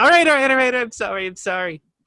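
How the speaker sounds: put-on very high shout. Playing a character yelling apologies at the waves: yelling apologies at the waves. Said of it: "She starts yelling at the waves".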